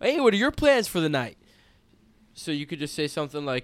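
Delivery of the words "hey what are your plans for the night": pitched-up, casual, cool, easygoing voice. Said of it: "You just go like".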